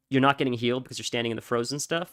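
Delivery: ordinary delivery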